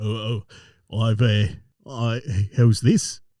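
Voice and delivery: deliberately deepened low, slow voice with stumbling start. Trying a lower voice after being asked to go low: voice pitched low. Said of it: "try to go low".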